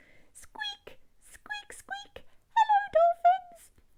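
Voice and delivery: very high, ear-piercing, dolphin-like squeaks. Showing the audience at home how a dolphin speaks, squeaky dolphin voice. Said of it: "nice and ear-piercing".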